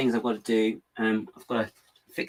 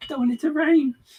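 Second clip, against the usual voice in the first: very high voice with slight quavering wobble; 4 dB louder than usual. Chatting about the cold, rainy weather, you let a slight quiver into your voice. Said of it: "a little quiver in a quaver in my voice".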